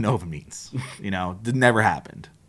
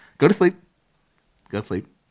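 fake lisp, slightly higher pitch; 4 semitones higher than usual. Showing how a name sounds when said out loud: put-on lisp. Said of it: "with a lisp".

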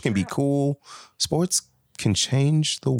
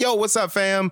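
casual voice, pitched up; 7 semitones higher than usual. Acting out a podcast intro, playing three parts: imitating Tori. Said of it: "Then Tori will be like".

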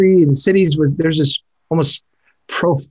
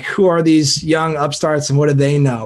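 plain

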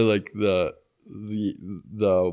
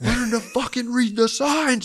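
very loud, higher-pitched yell at the top of lungs; 14 semitones higher than usual. Retelling screaming at the bus stop: imitating own past scream. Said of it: "absolutely at top of my lungs".

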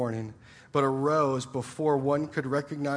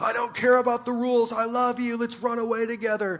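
high, dramatic screaming; 9 semitones higher, 4 dB louder than usual. Imagining a rain-soaked movie scene from The Notebook: imitating Ryan Gosling screaming. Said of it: "and he's screaming".

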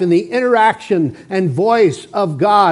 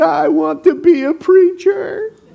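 put-on tearful voice, slow and high-pitched; 9 semitones higher than usual. Recalling answering a man's prayer question as a little boy: retelling tearful words. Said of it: "And through tears".

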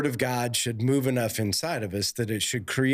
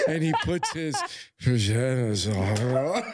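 mock-seductive delivery. Retelling how she said it while looking at the speaker, imitating a seductive voice. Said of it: "She says it in like a seductive voice".

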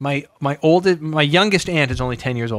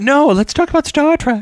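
put-on, very high, loud girly voice; 12 semitones higher, 6 dB louder than usual. Quoting the other speaker's suggestion back to them, imitating a girl's voice. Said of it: "That's how I do a girl's voice".

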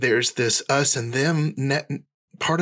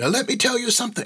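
very high-pitched put-on Scottish accent; 10 semitones higher than usual. Quoting a professor who would stand up and say: Scottish accent. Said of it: "I'm gonna stop the Scottish accent right there".

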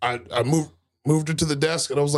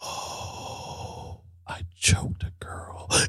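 very slow, very quiet, hushed whisper. Retelling the funniest line someone delivered, in a quiet whisper. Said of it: "whispered it like that quiet".

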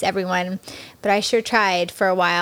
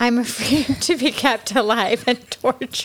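speech broken up by laughter; 3 semitones higher than usual. Admitting a dark fear to friends, laughing while talking. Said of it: "I don't know why I'm laughing".

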